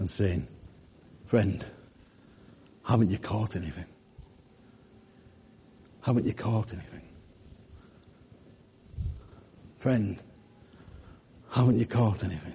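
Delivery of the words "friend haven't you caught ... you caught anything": caring, compassionate, sympathetic tone. Preaching, voicing Jesus speaking to listeners: compassionate voice of Jesus. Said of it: "the compassionate voice of Jesus speaking".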